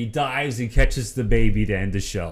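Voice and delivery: plain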